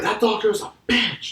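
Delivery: play-acted, very high, upset, screaming hissy-fit outburst. Retelling what a lady screamed while walking out: imitating someone screaming. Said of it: "screams that at me".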